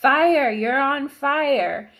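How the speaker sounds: put-on loud, high, very slow, stretched-out scream. Retelling screaming into a walkie-talkie about a fire: retelling screaming. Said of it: "I'm screaming in the walkie-talkie".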